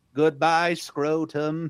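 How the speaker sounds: put-on high, flat, old-school robotic synth computer voice. Recounting the Halloween special, quoting the robot E.T. in its computer voice. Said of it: "There's just this robot E.T".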